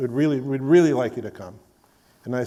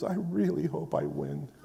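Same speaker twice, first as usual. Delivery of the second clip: acted, tearful, crying voice; 8 dB quieter than usual. Retelling what Jack Davis said at the award ceremony: imitating Jack Davis crying. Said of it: "and he's crying".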